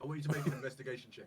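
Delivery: fast, rushed delivery while laughing. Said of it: "you're like".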